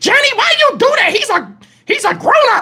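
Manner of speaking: play-acted very high, shrill scream. Retelling a family argument at home: imitating Bunny screaming. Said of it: "Bunny screaming at him".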